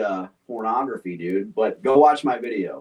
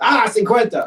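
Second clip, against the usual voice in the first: mock, very high, shrill, exasperated, frustrated yell; 10 semitones higher, 5 dB louder than usual. Retelling what he yells at coworkers: imitating own frustrated yelling. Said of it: "randomly yelling".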